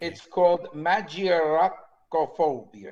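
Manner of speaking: word said loudly in a put-on Italian accent. Naming his wife's phobia, saying it in an italian accent. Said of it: "Notice I put the Italian accent in".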